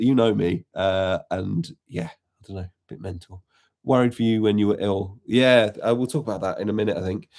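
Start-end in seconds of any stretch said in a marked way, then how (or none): none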